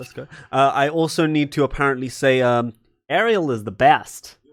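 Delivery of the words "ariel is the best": fake, clumsy, bad put-on American accent. Saying a line they apparently need to say: bad put-on American accent. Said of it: "That's not a bu- good American accent".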